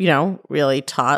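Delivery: ordinary talk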